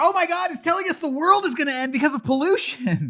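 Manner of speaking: mock high, loud, fast shrieking kid panic. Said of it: "they start crying and shrieking like".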